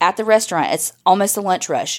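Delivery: ordinary talk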